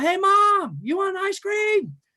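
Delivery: very high, loud shout. Speaker retells shopping with Mom, calling from the next aisle, retelling own scream across aisles. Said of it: "scream across".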